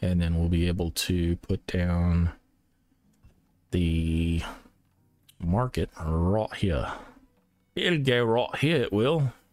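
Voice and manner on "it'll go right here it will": deliberately bad fake British accent, pitched up. Describing where the market will go, the speaker slips into a bad british accent. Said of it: "Bad British accent".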